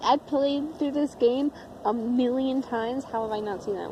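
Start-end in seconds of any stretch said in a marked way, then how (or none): none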